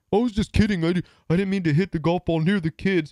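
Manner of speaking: mock high whiny teenager voice, smirking. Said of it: "They act like high schoolers sometimes".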